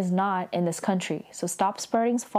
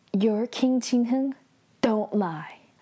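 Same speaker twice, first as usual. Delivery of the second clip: mock grave, theatrical, deadly serious delivery; 3 semitones higher than usual. Retelling a drama scene where the princess confronts him: imitating a dramatic, serious princess. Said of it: "She's all, like, dramatic and, like, very, like, serious".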